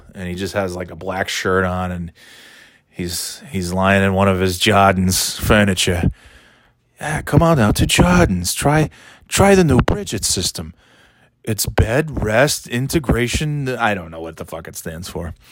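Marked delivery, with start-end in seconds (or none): 7.0-13.7 put-on TV-ad pitch style in thick New England accent. Imitating the man who is always on for Jordan's furniture, a soft-spoken, thick New England Elliot impression. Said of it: "soft-spoken, thick New England accent guy".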